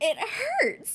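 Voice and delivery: high, loud laughing cry, laughing hard.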